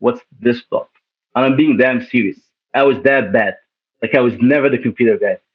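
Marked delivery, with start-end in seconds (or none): 0.0-0.9 confidential, fully voiced stage whisper. Retelling asking a friend a question during class: retelling a whisper. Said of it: "I whispered to him".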